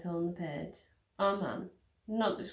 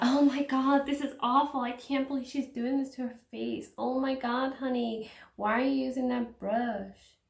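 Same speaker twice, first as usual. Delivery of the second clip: pitched-up, gushing American reaction-video voice; 6 semitones higher, 5 dB louder than usual. Imagining a reaction video mocking the makeup: imitating an American YouTuber. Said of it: "some guy or girl mooer just like".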